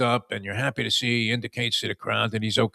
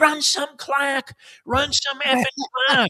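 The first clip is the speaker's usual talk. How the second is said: mock screaming pitched way up, shrill, desperate and frantic; 3 dB louder than usual. Retelling a man who bet on the game, imitating him screaming. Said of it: "he's screaming".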